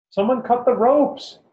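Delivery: very high, shrill, frantic, desperate yell. Narrating a trapped deer scene, a woman behind the narrator, desperate shout. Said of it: "A woman behind us desperately shouts".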